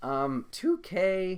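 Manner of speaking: voice cracking very high and loud. Talking about the game that got them into basketball, voice crack. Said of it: "that was a voice crack".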